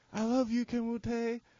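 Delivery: put-on very high, hyper, drawn-out silly girl voice. Retelling what a girl in middle school always said: imitating a silly, hyper girl. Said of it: "she was really silly and really hyper".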